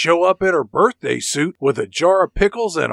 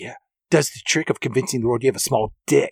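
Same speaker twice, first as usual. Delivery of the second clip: mock muttering under breath, faster; 5 semitones lower, 4 dB quieter than usual. Recounting a scene between two men, acting out a line muttered under breath. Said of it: "says under his breath".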